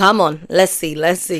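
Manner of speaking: plain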